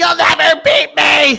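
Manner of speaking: high, loud, slow gloating victory shout.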